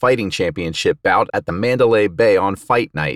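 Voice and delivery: ordinary delivery, nothing marked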